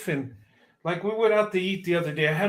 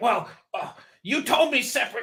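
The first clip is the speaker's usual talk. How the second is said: acted, haughty, snooty, snobby tone; 5 semitones higher than usual. Retelling a restaurant check mix-up, quoting the waitress: mock-snobby waitress voice. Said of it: "she was like snobby".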